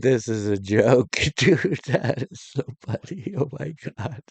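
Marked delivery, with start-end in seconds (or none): 0.0-3.3 words breaking up, laughing through them. Reacting to a clip of protesters, laughing while talking. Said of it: "I shouldn't be laughing".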